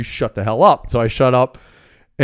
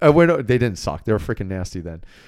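ordinary talk

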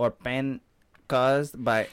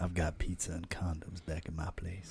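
very low, very soft, hushed seductive voice; 7 semitones lower, 10 dB quieter than usual. Showing friends how they're supposed to talk, in a sexy voice. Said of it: "speak in a sexy voice".

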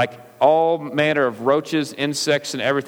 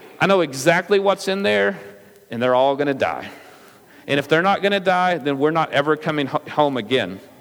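normal talking voice

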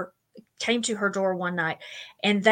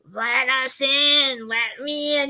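put-on eerie, creepy, very slow, drawn-out child voice; 4 semitones higher than usual. Retelling a story, the speaker quotes a little kid in a creepy, weird child voice. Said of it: "in this really creepy, weird voice".

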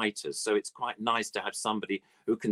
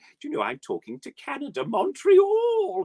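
very high, loud, sing-song, swooping puppet bird voice; 5 dB louder than usual. Introducing an old bird puppet on a call: Dodo bird puppet voice. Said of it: "I'm the Dodo bird".

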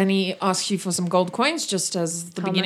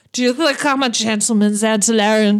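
put-on drunk character voice, louder; 2 semitones higher, 6 dB louder than usual. Voicing a drunk guest pulling a player close: drunk character voice. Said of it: "grabs you by the coat and he pulls you close and he's like".

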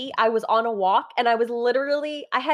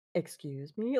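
put-on super deep, low bass voice; 5 semitones lower, 9 dB quieter than usual. Retelling a viral clip of a guy reacting to a video: imitating a super deep voice. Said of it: "with this super deep voice".

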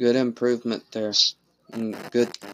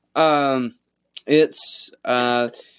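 speaking up, louder than before.

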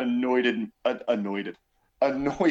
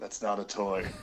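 low, soft, flat deadpan with no emotion; 4 semitones lower, 8 dB quieter than usual. Praising a favorite scene, quoting the masked hero's line: deadpan Mandalorian voice. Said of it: "and then deadpan Mandalorian".

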